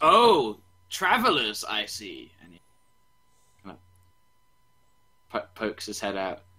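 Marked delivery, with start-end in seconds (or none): 0.0-2.3 very slow, drawn-out, swooping, sing-song dragon voice. Voicing a big brass dragon just woken by travelers: voicing a brass dragon.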